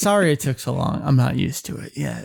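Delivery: low, creaky, smooth, calm voice.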